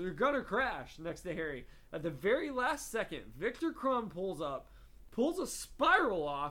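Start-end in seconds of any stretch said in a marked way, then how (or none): none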